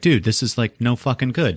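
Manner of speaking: ordinary delivery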